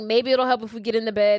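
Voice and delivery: ordinary talk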